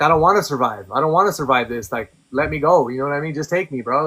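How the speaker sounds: acted, furious, desperate pleading tone. A speaker retelling a past ordeal, re-enacting angry pleading. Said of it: "I start getting mad".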